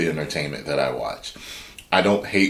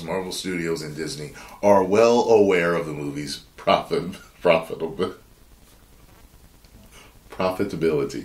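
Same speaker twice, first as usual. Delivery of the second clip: speech breaking up into laughter. Reading a script aloud and stumbling over a word, laughing while talking. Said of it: "Sorry, I'm laughing".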